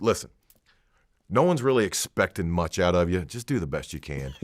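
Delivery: play-acted dry, matter-of-fact deadpan, no joking. Retelling a wrestler's pre-match advice backstage: imitating a deadpan delivery.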